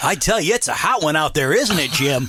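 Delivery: slow, deliberately cheesy, corny weatherman newscaster voice. Mimicking how weathermen talk on air, purposely corny weatherman voice. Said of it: "purposely corny".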